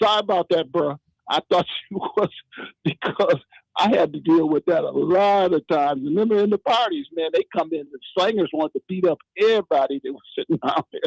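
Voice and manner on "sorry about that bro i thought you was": mild, called-out male holler. Retelling a man yelling across the street at the speaker, imitate him hollering. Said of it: "he started hollering".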